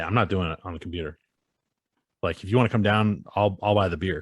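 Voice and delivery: ordinary talk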